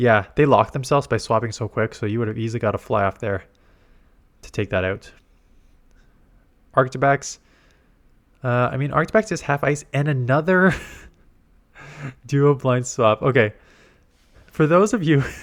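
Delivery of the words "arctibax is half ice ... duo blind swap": talking through laughter, higher pitch. Commentating a match replay, laughing while talking. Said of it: "I'm laughing just 'cause of how obvious".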